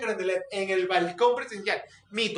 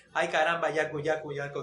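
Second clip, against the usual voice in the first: plain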